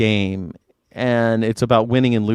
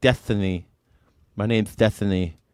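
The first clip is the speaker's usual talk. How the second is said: put-on lisp, slower and quieter; 4 semitones lower, 3 dB quieter than usual. Speaker mocks how a debater always talks, doing a Destiny impression with lisp. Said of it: "He's got kind of a lisp".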